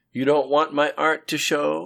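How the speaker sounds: light, teasing tone. As he holds up a gown for her, she asks him: playful question. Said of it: "she asked playfully".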